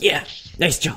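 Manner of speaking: low-key, high mutter under the breath. Imitating a father quietly praising his son's strikeout: imitating muttering under his breath. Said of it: "under his breath".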